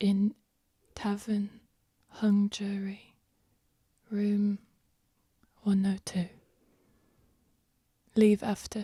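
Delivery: speaking in a whisper. A character secretly passes on a meeting place, whispering. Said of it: "she's whispering this".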